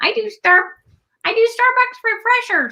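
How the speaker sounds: very high puppet-style voice. Asked to repeat the line, saying it again in an Elmo voice. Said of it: "do that again".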